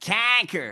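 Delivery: put-on nasal accent. Mocking a rally speaker's accent after watching the clip: imitating a nasal accent. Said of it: "that accent, that guy".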